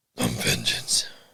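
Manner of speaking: rough, raspy whispered voice. Asking whether the other person watched The Batman, quoting it in a raspy Batman impression. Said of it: "It's a little more raspy".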